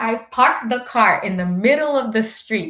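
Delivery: normal talking voice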